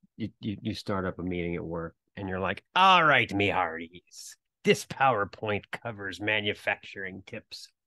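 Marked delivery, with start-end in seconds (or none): 2.7-7.7 loud, slow pirate voice. Imagining opening a work meeting on Talk Like a Pirate Day: pirate voice. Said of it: "International Talk Like a Pirate Day".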